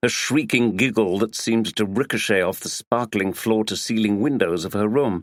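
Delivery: ordinary delivery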